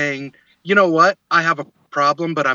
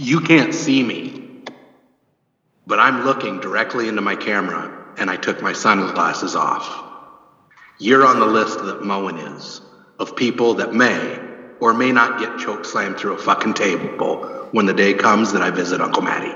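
put-on robot leader voice, lower pitch; 8 semitones lower than usual. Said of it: "did I go Optimus Prime there?".

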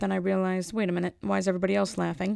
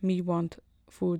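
caveman voice, slower. Speaker demonstrates how cavemen are thought to have spoken, caveman talk. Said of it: "how cavemen are suspected to have spoken".

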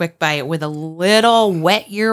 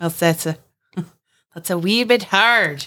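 put-on leprechaun-style Irish accent. Asked whether the accent was done, answering in a leprechaun-style Irish accent. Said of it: "Like that's like a leprechaun".

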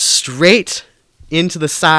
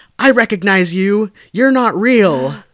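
acted-out, pitched-up, high shout; 6 semitones higher, 4 dB louder than usual. Recounting how a woman woke up and fought the police, retelling a yell. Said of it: "at one point she yelled".

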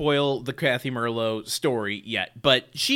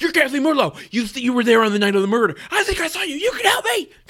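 put-on very high, loud, aggressive, accusing, rising pitch; 12 semitones higher, 5 dB louder than usual. Retelling how a movie character launches into a woman: imitating a hostile outburst. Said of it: "very hostily launches into her".

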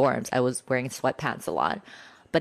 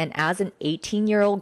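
normal talking voice

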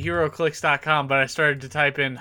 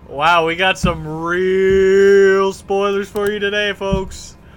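loud pumped-up hype voice, real drawn out; 4 semitones higher, 6 dB louder than usual. Teasing spoilers to the folks listening: hype voice. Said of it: "It's my hype voice".

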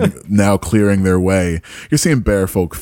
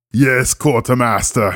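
put-on Austrian accent; 4 semitones higher than usual. Playing a role in a group game, answering in a fake Arnold accent. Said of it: "A fake Arnold accent".

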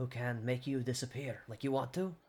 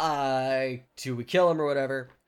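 ordinary talk

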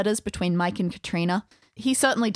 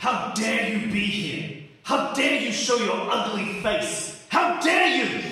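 growling ghostly voice; 2 semitones higher than usual. Voicing a figure snarling by the door: Culloden's snarling voice. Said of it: "Culloden's voice snarling by the door".

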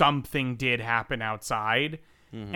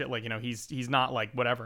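ordinary delivery

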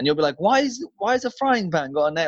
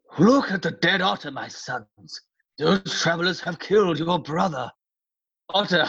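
put-on old man voice, elderly. Asked by the other reader to voice the old man in the story: Hreidmar old-man voice. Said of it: "Do you want to do a voice for the old man?".

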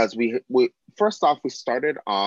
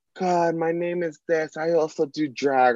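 put-on drunk speech, higher; 7 semitones higher than usual. Retelling first meeting someone while hosting: imitating a drunk person. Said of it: "she's fully plastered".

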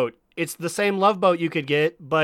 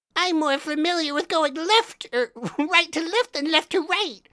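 very high-pitched voice, pushed way up; 10 semitones higher than usual. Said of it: "You sound like Weevil from Yu-Gi-Oh!".

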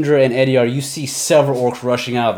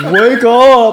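loud, goofy cartoon bear voice, pitched up; 10 semitones higher, 7 dB louder than usual. The narrator voices the Etten rousing its other head, in a Yogi Bear voice. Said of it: "Why does he sound like Yogi Bear?".

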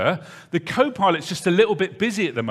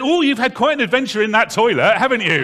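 loud, carrying steward-style announcement voice; 4 semitones higher, 4 dB louder than usual. Retelling what a steward said across the plane: imitating a loud steward. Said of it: "in a loud voice that the whole of the plane could hear".

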